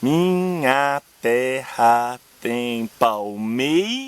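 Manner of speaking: very slow, scanned syllable by syllable.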